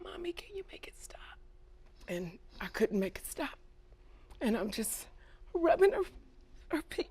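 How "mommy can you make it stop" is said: put-on tiny, hushed, small child's whisper. Mother retelling her daughter's words at the bedside, in Zachary's little small voice. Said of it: "in a little small voice".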